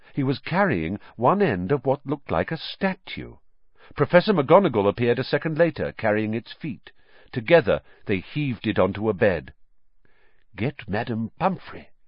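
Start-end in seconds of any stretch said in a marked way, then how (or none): 10.5-11.8 hushed whisper, quieter. Narrator reads a character speaking to a professor, whispered. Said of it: "whispered Dumbledore".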